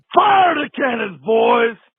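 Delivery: high, loud, rallying battle-cry shout.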